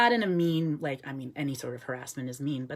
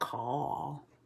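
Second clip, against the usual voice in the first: soft put-on southern drawl. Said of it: "a crow with, like, a southern drawl".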